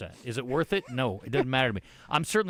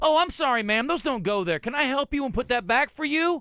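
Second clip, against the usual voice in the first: acted, very high, sugary, passive-aggressive fake politeness; 12 semitones higher, 4 dB louder than usual. Imagining speaking to a lady who left her cart: mock passive-aggressive politeness. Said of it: "I'm gonna start passive aggressive at people".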